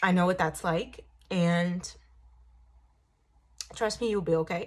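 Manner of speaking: fighting back tears, near crying. Speaking to people who feel bullied or left out; holding back tears. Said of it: "sorry, I don't want to cry".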